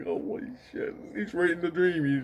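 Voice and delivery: breathy whisper, on the verge of tears. Retelling what a man said to him about the dream, imitating someone almost crying. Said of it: "he's not really crying, but he's like".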